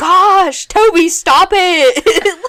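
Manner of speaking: high, loud, slow exasperated scolding, sounding over it.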